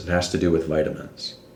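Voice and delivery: ordinary talk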